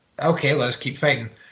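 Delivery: plain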